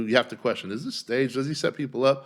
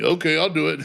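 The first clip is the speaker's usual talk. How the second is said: dim, dopey, go-along big-dummy voice; 4 semitones higher, 4 dB louder than usual. Acting out the boy cat as the big dummy: playing the big dummy. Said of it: "he's gonna be like the big dummy".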